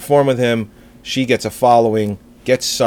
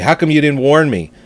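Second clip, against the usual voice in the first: mild half-shout, voice raised to carry far; 4 semitones higher than usual. Retelling the wife coming home after the movie: retelling her yell. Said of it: "she comes home and she yells at me".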